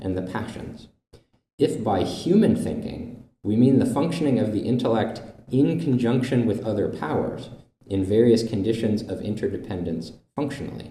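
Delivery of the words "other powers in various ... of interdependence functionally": normal talking voice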